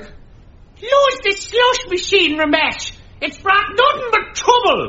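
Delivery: very high, otherworldly spirit voice. Asked what Margaret sounded like, the one who channeled her answers in Margaret's channeled voice. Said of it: "what did Margaret sound like?".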